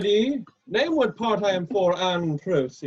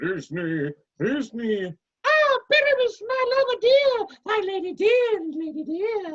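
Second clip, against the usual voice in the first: monstrous little voice, slower pace; 12 semitones higher than usual. An actor begs to play Thisbe as well during casting: Thisbe in a monstrous little voice. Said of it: "I'll speak in a monstrous little voice".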